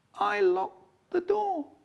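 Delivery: feeble, tiny, weedy, very high voice. Retelling trouble over a stuck, locked door, the speaker quotes themselves in a weedy little voice. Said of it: "In a weedy little voice".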